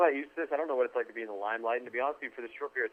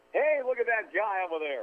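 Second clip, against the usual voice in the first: exaggerated, over-the-top announcer voice, pitched higher; 9 semitones higher than usual. Showing the same line after his normal voice: exaggerated broadcaster voice. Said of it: "a little bit exaggerated".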